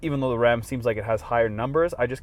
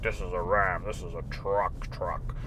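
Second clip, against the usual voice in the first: deep, slow commercial announcer voice; 4 semitones lower, 7 dB quieter than usual. Reviewing a truck and mimicking truck commercials, deep truck-commercial voice. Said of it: "those commercials you see with those deep voices".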